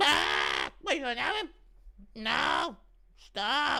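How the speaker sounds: terrified, very high, very slow, swooping voice. Performing for the chat, imitating Leon frozen in fear. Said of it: "Impression of Leon seeing Nina and freezing in fear".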